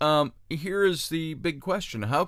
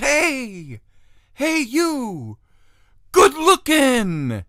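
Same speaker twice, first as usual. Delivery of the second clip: very high, very slow hollering, each hey dragged out; 9 semitones higher, 7 dB louder than usual. Retelling a comic film scene, the doctor calls to the monster: imitating Gene Wilder's Frankenstein calling out. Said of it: "Gene Wilder's character, Doctor Franken-, Frankenstein".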